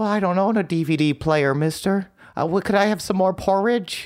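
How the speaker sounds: high, much sadder, pitiful put-on pleading voice. Correcting a friend's imitation of him, the speaker retells his own line in a mock-sad pitiful orphan voice. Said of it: "It's a lot sadder".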